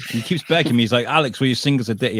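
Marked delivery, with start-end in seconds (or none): none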